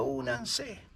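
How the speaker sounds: voice breaking and cracking, barely a whisper. Retelling what a voice called Father answered, imitating a breaking voice. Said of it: "con una voz quebrada".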